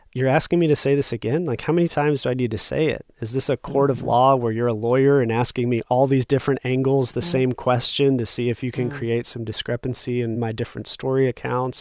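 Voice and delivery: plain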